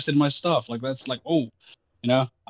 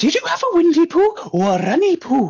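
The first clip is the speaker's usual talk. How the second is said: put-on big, strong Welsh accent, very high and sing-song; 4 dB louder than usual. Quoting their grandmother's question, speaking in a strong welsh accent. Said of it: "With a big, strong Welsh accent".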